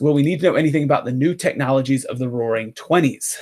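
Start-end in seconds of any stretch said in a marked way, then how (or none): none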